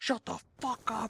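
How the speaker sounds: put-on angry, shrill, very high, loud drunken yell. Telling about a drunk man charging at them, the speaker retells his yell. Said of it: "he was yelling at us".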